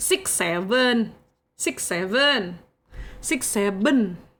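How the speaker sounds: Indonesian accent, drawn way out, very slow. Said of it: "with Indo accent".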